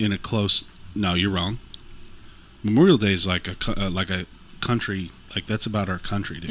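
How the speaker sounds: ordinary delivery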